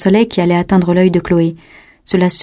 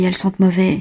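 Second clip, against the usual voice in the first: ordinary delivery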